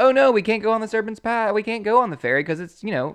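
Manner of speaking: high, loud, whiny tone. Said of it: "Then they like".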